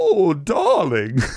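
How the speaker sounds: put-on British accent. Teasing a co-host who picks up accents, in a mock British accent. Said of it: "With a fucking accent".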